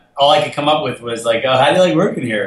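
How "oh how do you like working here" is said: silly, dorky, goofy, awkward put-on voice. Retelling what they came up with in the office that day, in a goofy voice. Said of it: "it was like this goofy voice".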